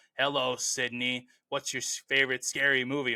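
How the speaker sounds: put-on menacing villain voice. Praising an iconic ghost voice, then trying it: Ghostface voice. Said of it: "That was my best impression of a Ghostface".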